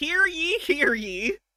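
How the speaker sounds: put-on very high, slow, old-timey town crier voice. Imitating an old-timey crier announcing the Code of Hammurabi: old-timey town crier. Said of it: "it's old-timey, so I'm gonna do it".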